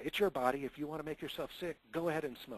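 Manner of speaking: mildly angry, slightly cross tone. Example reaction to a child's smoking, said a little angry. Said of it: "I'm going to try to say this a little bit of anger".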